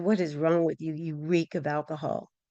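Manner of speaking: mock-disgusted tone. Retelling what the supervisor said when she pulled the speaker off the trip, imitating a disgusted tone. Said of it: "looked at me with disgust and said".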